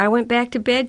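embarrassed with a little laugh. A mother answers her daughter Laurie, with an embarrassed little laugh. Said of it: "she said with an embarrassed little laugh".

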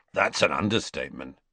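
ordinary talk

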